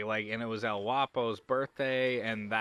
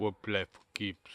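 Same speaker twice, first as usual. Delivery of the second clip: put-on German accent; 2 semitones lower, 4 dB quieter than usual. Retelling a film showdown line, say it in a German accent. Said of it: "That's German".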